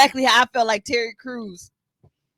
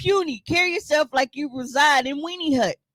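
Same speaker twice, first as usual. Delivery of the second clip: usual speaking voice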